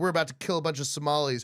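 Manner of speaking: normal talking voice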